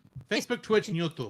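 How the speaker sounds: put-on, laid-over fake Russian accent. A streamer telling viewers where to comment, in a fake Russian accent.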